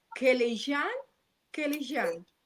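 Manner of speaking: name pronounced the French way, French accent. Host introducing a guest doctor and attempting her surname, French-accented pronunciation. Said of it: "hasta lo dije con un tono francés".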